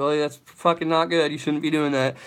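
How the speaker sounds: usual speaking voice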